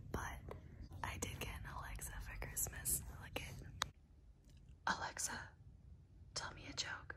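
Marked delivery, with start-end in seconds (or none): 3.2-7.1 hushed whispering voice, quieter. Asking the Alexa device for a joke: whispering. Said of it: "I think you just whispered to me".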